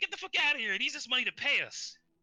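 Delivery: very high, shrill screaming goblin voice. Retelling a game scene where one goblin screams out: retelling a goblin screaming. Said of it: "one of the goblins like sort of screams".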